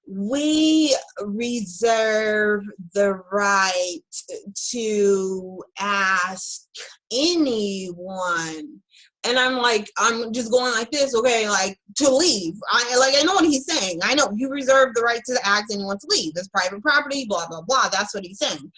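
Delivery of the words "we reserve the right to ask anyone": very slow, patronizing, talking-down drawl. Retelling a man's reply when asked if they must leave, imitating a slow patronizing tone. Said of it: "in this disgusting, slow, patronizing".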